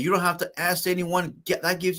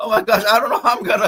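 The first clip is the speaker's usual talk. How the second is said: mock very loud, frantic, panicked outburst; 3 semitones higher, 8 dB louder than usual. Retelling how an unpaid government worker answered: imitating someone panicking. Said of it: "they're panicking".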